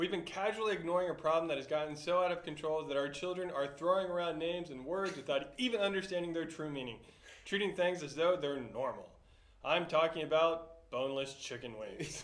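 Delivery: ordinary talk, nothing marked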